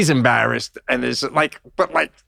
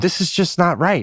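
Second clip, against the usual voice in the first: put-on complaining older woman voice, higher; 5 semitones higher than usual. Retelling what an older lady on a plane said to the flight attendant: imitating an older lady complaining. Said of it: "she's saying it about that level".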